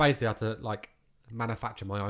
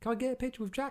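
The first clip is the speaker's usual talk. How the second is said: high, put-on middle-aged lady voice, pitched way up.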